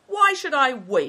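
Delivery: shrill outcry, very high and very loud. Good Fortune answers Big Tiger, who told him to wait; crying out. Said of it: "cried Good Fortune".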